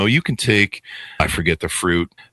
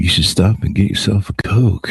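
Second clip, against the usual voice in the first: acted-out small, mock-evil inner voice. Retelling a sugar craving on the way home, the speaker does a little evil voice. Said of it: "a little little evil voice said".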